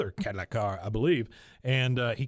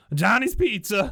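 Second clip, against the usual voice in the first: high, loud, silly fake Greek accent; 9 semitones higher, 7 dB louder than usual. Retelling how a scared Luann finally picks up the ringing phone: Luann's stupid fake Greek voice. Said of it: "stupid Greek, yeah, Greek voice".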